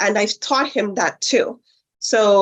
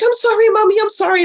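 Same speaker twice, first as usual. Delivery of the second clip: put-on very high, jittery, nervous small-child voice; 13 semitones higher, 4 dB louder than usual. A mother retells the boy apologizing after spilling water, imitating a nervous child. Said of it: "Like he got all nervous".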